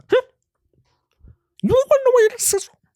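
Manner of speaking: very high, rushed, fast hyped-up rant. Imitating Gary Vee asking why you're not successful: fast-talking Gary Vee impression. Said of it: "Talks so fast 'cause he's clearly on".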